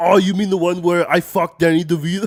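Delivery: very loud, high-pitched belted shout. Playing Arnold Schwarzenegger as a podcast guest: Arnold Schwarzenegger voice. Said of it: "that's a good impression".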